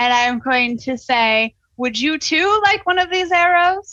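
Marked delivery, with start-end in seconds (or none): 1.8-3.9 high-pitched, taunting, challenging yell. Taunting the enemy who shot you: yelling a taunt. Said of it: "yell at the guy who shot me".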